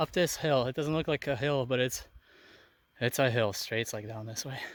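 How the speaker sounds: winded, puffing, out-of-breath talk. Golfer hiking uphill to the next hole, out of breath. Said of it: "i'm out of breath".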